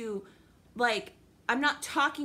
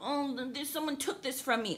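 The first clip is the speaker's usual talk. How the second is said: put-on tearful whining, quieter; 5 dB quieter than usual. Mocking people who complain online, imitating them: mock crying voice. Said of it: "You're crying about".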